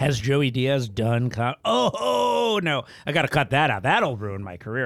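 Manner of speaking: normal talking voice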